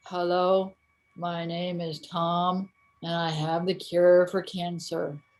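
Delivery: low, slow, flat, unenthusiastic monotone. Imitating how scientists start speaking: imitating a flat unenthusiastic speaker. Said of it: "you really should have a little more enthusiasm".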